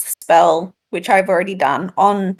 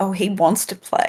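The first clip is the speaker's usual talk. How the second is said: muttered quietly under the breath, quieter; 6 dB quieter than usual. Speaking in character in the secret language: quietly under the breath. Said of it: "quietly say under my breath in the secret language".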